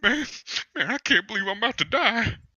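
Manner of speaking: fake tearful pleading. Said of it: "He noticeably starts crying".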